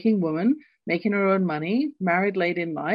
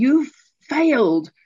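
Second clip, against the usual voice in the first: put-on scream, higher and louder; 5 semitones higher, 6 dB louder than usual. Retelling the moment a father opened exam results: retelling a father's scream. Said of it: "he just literally screamed at me".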